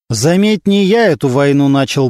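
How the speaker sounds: plain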